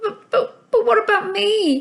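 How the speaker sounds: very high, slow, squeaky stammer. Reading a story, Socks answers Mister Dog's plan to leave: Socks squeaking. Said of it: "Socks squeaked".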